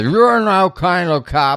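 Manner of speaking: high-pitched, slow, mock zombie-like drunk voice. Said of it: "mimics Chad and says".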